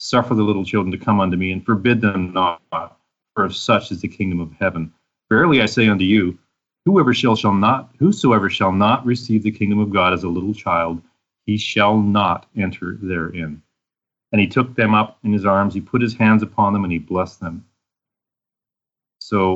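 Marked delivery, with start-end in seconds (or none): none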